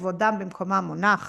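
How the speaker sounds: ordinary talk, nothing marked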